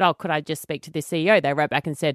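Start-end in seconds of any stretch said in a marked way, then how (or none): none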